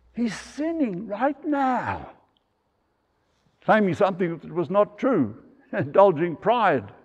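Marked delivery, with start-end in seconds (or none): 0.1-2.1 carrying stage whisper, loud, pitched up, slow. Preaching, quoting a sister in the back seat of the church: retold loud whisper. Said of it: "said in a loud whisper".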